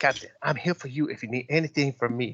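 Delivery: put-on ship AI voice with accent. The ship's computer, newly switched to a different voice setting, addresses the captain in Yosoki's voice. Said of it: "and sees voice function. So where he highlights it, and he says, "Guys, there's other voices here for the computer," and he starts to scroll through them, and he's like, "There's one called Russian. /".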